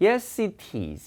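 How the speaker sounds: British accent. A toeic teacher demonstrates british pronunciation to students, in a british accent. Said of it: "영국 사람들 발음 특징 중에 하나가 이 모음하고 t를 붙이죠".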